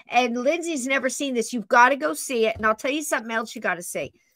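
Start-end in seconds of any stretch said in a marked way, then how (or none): 2.5-4.1 words rattled off very fast. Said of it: "I'm talking real fast".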